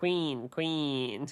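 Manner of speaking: put-on gnome voice, soft and little. Retelling what a group all say together, in a gnome voice. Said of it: "in like a gnome voice".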